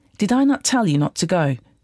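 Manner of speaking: plain reading voice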